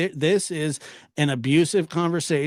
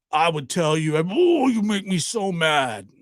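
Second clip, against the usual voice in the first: imitated gruff wrestler voice. Retelling how a friend sounded when mad: Hulk Hogan voice. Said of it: "he kinda sounded like Hulk Hogan a little bit".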